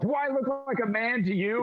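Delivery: indignant, affronted, high-pitched. Voicing a stout woman who is taken for a man: offended stout woman NPC. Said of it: "grabs your tits and she's like".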